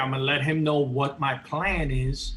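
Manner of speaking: ordinary talk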